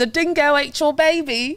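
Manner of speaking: put-on Australian accent. Asked by the others to hear it, trying an australian accent. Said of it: "let's hear it".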